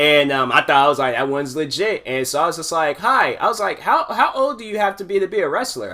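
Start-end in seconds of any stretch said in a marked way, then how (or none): 3.8-5.9 disguised, high-pitched put-on voice. Retelling a past phone call, in a high-pitched voice. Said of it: "High pitched voice, high pitched voice".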